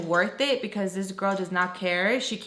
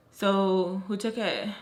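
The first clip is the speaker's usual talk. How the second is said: ordinary delivery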